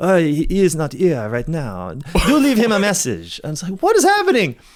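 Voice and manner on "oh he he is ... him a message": put-on French-accented voice. Describing a voicemail greeting heard when calling people, french secretary accent. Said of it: "this French secretary who's like".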